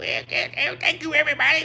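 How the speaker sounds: very high, cartoonish duck character voice. Joking about how to address people, the speaker demos a Daffy Duck voice. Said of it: "It's probably a Daffy Duck voice".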